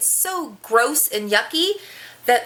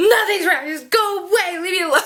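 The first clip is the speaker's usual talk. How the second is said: put-on tearful, high, sobbing crying voice; 5 semitones higher than usual. Mother retells answering her child while hiding in the bathroom; retelling her own sobbing. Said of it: "I'm sobbing my full head off".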